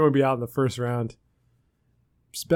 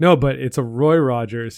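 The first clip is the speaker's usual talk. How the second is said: ordinary delivery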